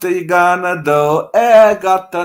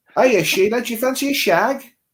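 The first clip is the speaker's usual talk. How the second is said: imitated Australian accent; 5 semitones higher, 4 dB quieter than usual. Asked by the other person to show an Australian accent, Australian accent impression. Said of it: "do your Australian accent".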